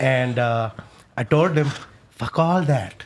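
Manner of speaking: put-on odd Indian accent. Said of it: "the weird accent thing you can do".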